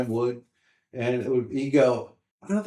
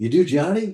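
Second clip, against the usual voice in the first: eager, optimistic, bright and hopeful, pitched up; 5 semitones higher, 5 dB louder than usual. Recalling audience members questioning him after a club show, mock-optimistic audience question. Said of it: "very optimistic".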